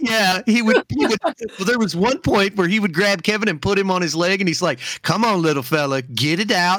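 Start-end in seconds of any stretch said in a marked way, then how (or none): 5.0-6.8 mock patronizing, condescending, talking-down voice. Retelling a comedian treating another like a child: imitating talking down to a child. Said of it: "he just treated him like such a child".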